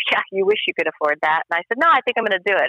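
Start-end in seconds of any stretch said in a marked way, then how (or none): 0.1-1.4 mock laughing while speaking. Speaker retells her husband's reply to her jersey joke; retelling a laughing reply. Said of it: "And my husband's laughing".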